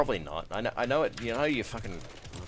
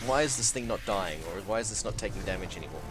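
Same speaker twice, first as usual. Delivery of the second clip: plain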